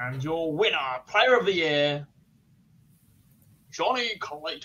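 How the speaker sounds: very slow ring-announcer call, every word stretched. Announcing the poll winner, player of the year: Johnny Mac impression. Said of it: "In his best Johnny Mac impression".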